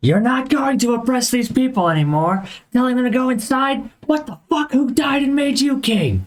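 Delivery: very high, furious, angry in-character yelling. Playing a character confronting the captain while walking up: yelling in character. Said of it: "I'm just yelling at him".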